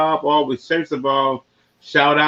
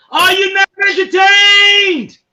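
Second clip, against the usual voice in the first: dramatic put-on gladiator voice, very high and loud; 8 dB louder than usual. Saying a line in a put-on gladiator voice. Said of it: "In my gladiator voice".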